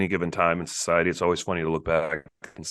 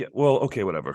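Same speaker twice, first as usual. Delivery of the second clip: ordinary talk, nothing marked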